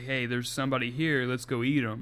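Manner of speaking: ordinary talk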